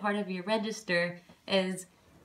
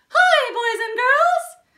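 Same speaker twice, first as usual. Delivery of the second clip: squeaked, high-pitched and loud; 10 dB louder than usual. Demonstrating head voice by saying a greeting, Mickey Mouse voice. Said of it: "Can you say that like Mickey Mouse?".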